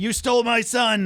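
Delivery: furious, high-pitched angry yell. Recapping a TV scene where one character confronts another, retelling a yell. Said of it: "he's just yelling at him".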